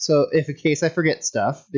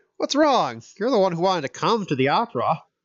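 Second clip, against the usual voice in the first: unsuccessful attempt at a pompous tone; 4 semitones higher than usual. Reading a game character's line aloud, trying to sound pompous. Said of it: "I'm trying to sound pompous".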